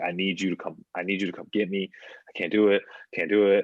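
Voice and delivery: put-on hyperventilating panicked pleading voice. Retelling a bathroom-stall phone call to a mother: imitating a hyperventilating panicked plea. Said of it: "basically hyperventilated".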